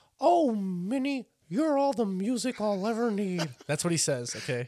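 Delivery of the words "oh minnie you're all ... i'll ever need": squeaked out, way up high. Doing voices for the guys, the speaker quotes Mickey: Mickey Mouse voice. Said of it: "[name] with his voices, ... A Mickey".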